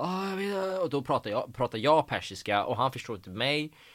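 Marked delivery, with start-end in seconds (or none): 0.0-0.8 high, terrified blurt. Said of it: "förskräckt och bara".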